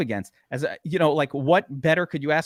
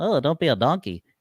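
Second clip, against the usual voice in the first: tiny, small little-guy voice. Voicing the little contrarian guy in the back of your mind; little contrarian guy voice. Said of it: "he speaks like that because he's little".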